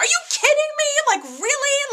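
high, loud screaming. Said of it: "that's when I started screaming at the screen".

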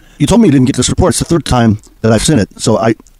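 ordinary talk, nothing marked

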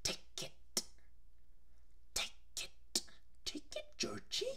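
breathy, whispered character voice. Describing a film character's voice from the trailers, doing a Pennywise voice. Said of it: "that's my Pennywise impression".

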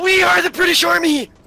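battle-cry scream, high pitched and very loud.

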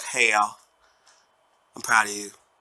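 put-on dog voice. Voicing the dog Winnie after asking her about the winners: voicing the dog Winnie. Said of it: "Winnie's like".

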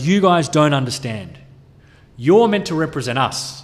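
normal talking voice

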